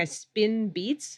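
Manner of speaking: ordinary talk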